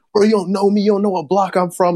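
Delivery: very high, frantic tough-guy voice, freaking out. Retelling a video of a man freaking out: imitating someone freaking out, acting tough.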